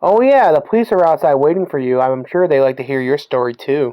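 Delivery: ordinary talk, nothing marked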